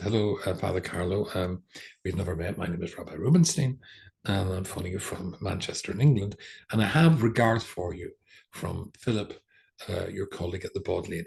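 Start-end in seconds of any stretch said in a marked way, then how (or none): none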